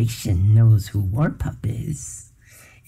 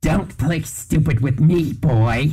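high, spiteful, malicious screeching; 5 semitones higher than usual. Narrator reads a creature's threat to a boy, malicious screech. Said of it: "It screeched maliciously".

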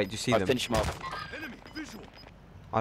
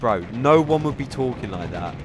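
plain

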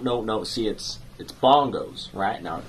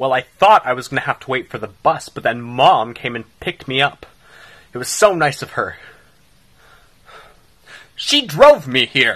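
very loud, angry-sounding delivery; 3 semitones higher, 9 dB louder than usual. Answering someone surprised they're already home from school, sounding angry. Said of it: "You sound like you're angry about it".

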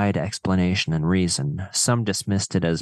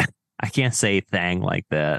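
usual speaking voice

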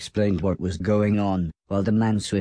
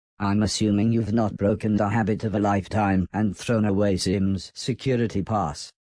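usual speaking voice

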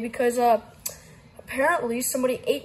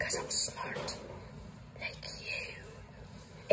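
slow, whispered, put-on British accent. Explaining how you found out someone's address, in a british accent. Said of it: "don't talk in my British voice".

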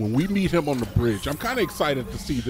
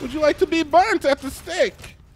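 high, loud mock German accent. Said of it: "I shouldn't say that with a German accent".

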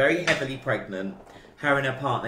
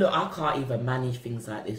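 ordinary talk

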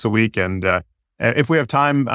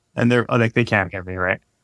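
ordinary talk

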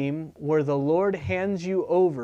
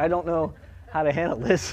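plain

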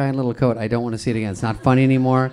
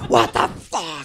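mock exasperated, fed-up, frustrated outburst; 4 semitones higher than usual. Retelling how an actor reacted when his costume failed to rip: imitating a frustrated outburst. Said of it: "he gets so frustrated, he goes".

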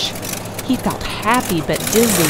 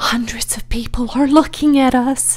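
put-on whisper, higher pitch; 5 semitones higher than usual. A narrator reads Mrs. Zuckerman at the judge's stand; whispering. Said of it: "whispered Mrs".

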